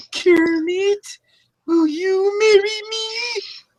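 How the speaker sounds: very high, slow character voice. Doing an impression, proposing to Kermit: Miss Piggy voice. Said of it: "my Miss Piggy impression".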